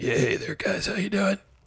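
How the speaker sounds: scratchy voice. Greeting the hosts as a veteran baseball player guest: scratchy voice. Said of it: "Listen how scratchy your voice is".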